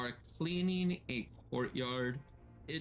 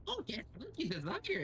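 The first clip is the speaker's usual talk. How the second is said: tiny creature voice, much higher pitch; 11 semitones higher than usual. An invisible creature hidden under someone's hat speaks, little creature voice. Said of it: "a little creature saying".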